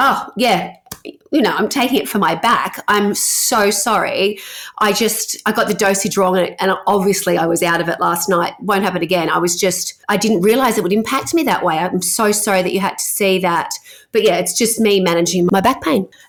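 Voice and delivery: plain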